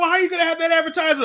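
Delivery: mock indignant, angry, very high-pitched voice. Retelling a complaint to theater staff about missing popcorn: imitating own angry complaint.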